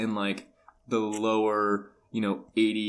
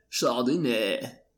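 California surfer voice, fake French accent on chardonnay; 2 semitones higher than usual. Talking about Chardonnays on the show, the host does a surfer dude with French accent. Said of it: "surfer dude from California pronounced the word Chardonnay with a French accent".

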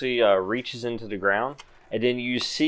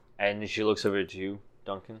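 usual speaking voice

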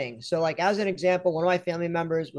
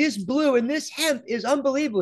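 high, put-on, thrilled excited shriek; 7 semitones higher, 3 dB louder than usual. Retelling a call from a listener, a doctor in Colorado, imitating a caller screaming. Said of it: "She's like screaming in the phone".

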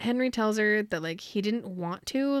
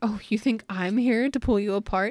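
ordinary delivery

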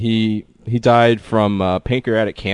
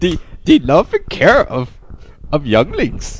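small, high-pitched creature voice; 7 semitones higher than usual. Answering a question put to Yoda: Yoda voice. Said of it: "Yoda, tell me".

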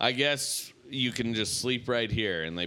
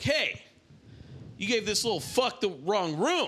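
put-on yell, higher pitch; 11 semitones higher than usual. Retelling how a man from the bed yelled at the guard: imitating an inmate yelling. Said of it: "he yells at the, at the guard".

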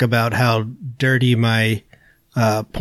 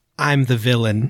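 usual speaking voice

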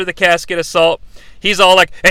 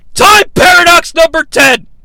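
mock very high-pitched, loud, ranting shout; 10 semitones higher, 5 dB louder than usual. Retelling a wrestling segment where the Sheik yells: imitating the Sheik yelling. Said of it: "Sheik is yelling".

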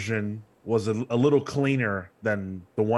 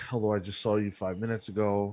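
deflated, flat, let-down disappointed tone; 6 dB quieter than usual. Greeting someone joining the Twitch stream, sounding disappointed. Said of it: "could you sound more disappointed?".

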